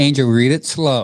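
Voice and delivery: plain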